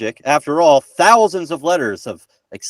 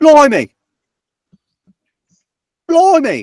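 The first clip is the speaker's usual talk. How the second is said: put-on very high-pitched, loud exclamation in a British accent. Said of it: "Better than mine".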